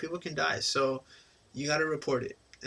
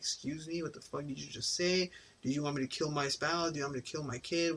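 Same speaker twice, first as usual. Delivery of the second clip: acted, really mad, mock-angry snapping; 5 dB quieter than usual. Acting out how someone really mad would snap back, mock-angry outburst. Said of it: "really mad and be like".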